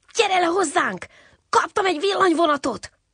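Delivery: very high-pitched, eager, excited calling out. Jocó bursts into Csiribi's hollow to fetch him: excited. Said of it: "Izgatottan hadonászott".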